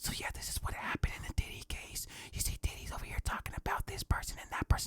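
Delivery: breathy, very soft whisper, barely voiced. Speaker retells a TikTok video of a random lady; imitating a lady whispering. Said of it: "one random lady just whispering to me".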